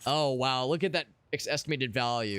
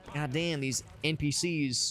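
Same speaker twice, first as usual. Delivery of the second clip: normal talking voice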